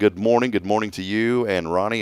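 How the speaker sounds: ordinary delivery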